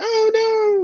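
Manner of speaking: very high put-on wail of dismay. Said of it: "And he's like".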